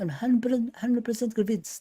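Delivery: put-on Arabic accent. Repeating what Salah said at the end of last season, Salah impression, Arabic accent. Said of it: "like an Arabic accent".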